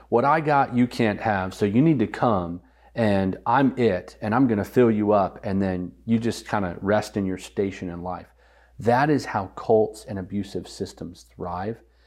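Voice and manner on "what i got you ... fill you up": ordinary talk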